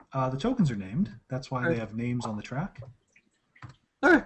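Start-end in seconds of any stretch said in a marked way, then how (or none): 0.2-2.8 low, quiet, snide, cutting, bitchy sarcastic tone. Answering a question about whether the tokens are named, bitchy sarcasm. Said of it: "That was sarcasm as well".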